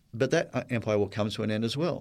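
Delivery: plain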